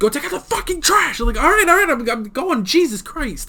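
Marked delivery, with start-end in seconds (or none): 0.0-1.2 mock high-pitched bellowed yell. Talking about a movie, act out J.K. Simmons yelling at you, imitating J.K. Simmons yelling. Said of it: "If he yells at me".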